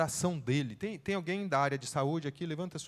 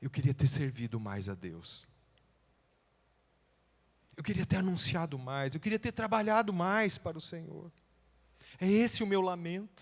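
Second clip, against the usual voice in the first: acted tearful, sorrowful, regretful voice through tears; 3 semitones higher than usual. Telling listeners what a man said to him, retelling a tearful lament. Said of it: "com lágrimas nos olhos".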